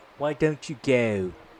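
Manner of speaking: go said softly with a British accent. Teaching how to speak with a British accent, demonstrating a phrase in a British accent. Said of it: "you would pronounce with a British accent".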